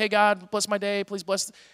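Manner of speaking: flat, monotonous, droning prayer-like delivery. Showing listeners how not to pray, in a monotonous prayer voice. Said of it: "pray in that monotonous way".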